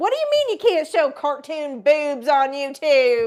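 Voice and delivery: put-on very loud, very high-pitched Southern accent. Retelling what a woman said, in her southern accent. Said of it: "she's got a southern accent".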